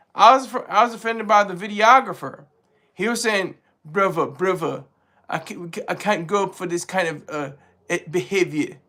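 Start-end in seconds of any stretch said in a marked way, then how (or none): 3.9-8.7 soft, terrible put-on English accent. Speaker quotes a videographer who objected to the behavior; terrible english accent. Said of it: "that's my terrible accent".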